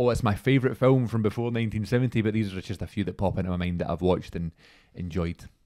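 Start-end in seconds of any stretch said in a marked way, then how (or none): none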